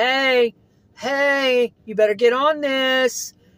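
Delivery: pushy, urgent, loud nagging voice, drawn-out "hey". Describing an inner guidance voice, the speaker acts out its push: imitating a loud nagging voice. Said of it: "It's more of a louder nag".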